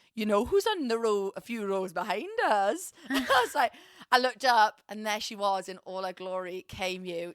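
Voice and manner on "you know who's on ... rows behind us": imitated Welsh accent. Retelling a friend's words, in the speaker's best welsh accent impression. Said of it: "this is my best Welsh impression".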